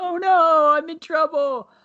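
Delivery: put-on very high, slow, drawn-out tearful crying. Retelling a scene where a character runs off crying: imitating a character crying. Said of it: "and crying, like".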